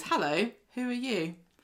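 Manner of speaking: nervous, jittery tone. Narrating a scene, a character rocks a cradle and greets a stranger, nervous. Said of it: "rocks the cradle a bit nervously and goes".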